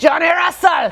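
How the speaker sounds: high, shrill, shouted, terrible put-on Scottish accent. Cheering for Johnny Russell for SKC fans in a terrible put-on Scottish accent. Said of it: "that's a terrible Scottish accent".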